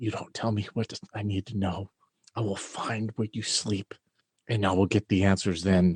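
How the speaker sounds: low, hushed whisper, very close. Pulling another character close by the shirt, whispering in his ear. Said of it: "I'm gonna whisper to him like".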